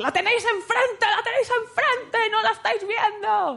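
high mock yell pitched way up, not shrill.

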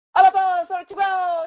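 very high, loud, shrill put-on voice. Showing the others an impression of Giz. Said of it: "Esta es mi imitación de Giz".

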